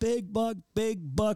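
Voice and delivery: very high, loud hollered yell. Retelling a hunt where Rory yelled about the deer: imitating someone yelling. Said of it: "Rory's yelling".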